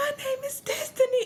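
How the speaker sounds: very high voice with a hoarse edge. Trying to show how the voice sounded back then, give the name in a put-on almost hoarse voice. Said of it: "almost sounded like she was hoarse".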